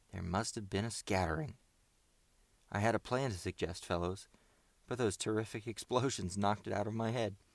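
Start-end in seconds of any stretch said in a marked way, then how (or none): none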